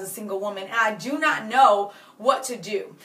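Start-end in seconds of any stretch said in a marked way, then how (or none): none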